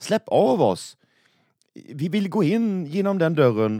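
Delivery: high, loud, gleeful cry of delight. After the swans speak of a mysterious realm, a character shouts with joy. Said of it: "ropade Semlan av glädje".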